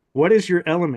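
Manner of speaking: acted-out yell. Retelling how a voice called out to the speaker: retelling a yell. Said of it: "It yells out next".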